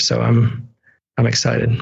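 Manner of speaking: deadpan, flat monotone with no pitch lift. Speaker wrapping up talk about their fan art, in a very monotone delivery. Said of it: "I said it in a very like monotone".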